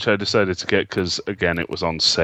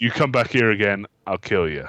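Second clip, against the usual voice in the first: put-on scary voice, higher pitched; 3 semitones higher than usual. Retelling a film scene where a character threatens someone: imitating Andy Serkis being scary. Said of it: "he can be really scary when he wants to be".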